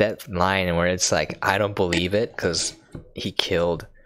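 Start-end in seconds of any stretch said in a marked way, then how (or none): none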